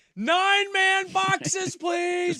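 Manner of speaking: very high, shrill screamed line. Retelling screaming at an iPad during a game: retelling own screaming. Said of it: "I'm screaming at my iPad".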